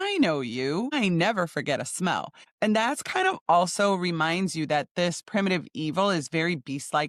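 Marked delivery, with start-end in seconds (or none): none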